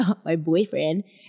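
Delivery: playful, light, teasing, joking tone. Retelling a joke made on the phone: imitating own joking tone. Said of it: "I think I joked and I was like".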